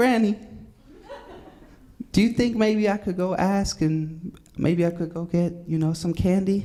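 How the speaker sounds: extra-nice, sugary, sweet little put-on voice. Retelling a skit, the speaker asks Granny for candy in a put-on sweet little voice. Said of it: "And I put on my sweet little voice".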